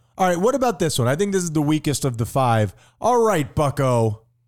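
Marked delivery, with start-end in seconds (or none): 3.0-4.2 irritated, upset, simmering annoyance, still building up. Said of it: "He's upset".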